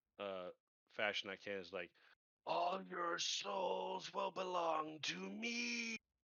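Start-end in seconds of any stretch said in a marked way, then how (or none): 2.5-6.0 high, very slow, drawn-out infernal guttural roar. Intimidating enemies in character: guttural infernal scream. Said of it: "scream an infernal as loud as I can in the most guttural".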